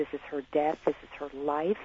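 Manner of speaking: ordinary delivery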